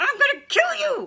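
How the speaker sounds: very high, shrill, drawn-out upset outburst. Speaker demonstrating how women sound when they get upset: mock-upset higher pitch. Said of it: "that's the higher pitch that we go to when we get upset".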